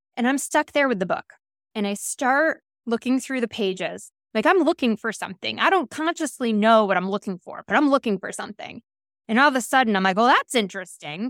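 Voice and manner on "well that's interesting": mock-sarcastic, super sarcastic tone. Retelling a reaction while looking through a book, super sarcastic tone. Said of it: "Super sarcastic tone".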